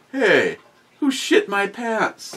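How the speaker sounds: very high, slow, drawn-out confused voice. Describing a picture sent last night, imitating a confused Biden. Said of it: "Biden all confused going".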